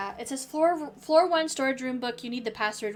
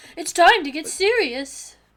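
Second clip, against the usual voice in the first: put-on shrill, very loud, derisive taunting; 5 semitones higher, 8 dB louder than usual. Showing how a character mimics him: mocking imitation of him. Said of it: "she's imitating him?".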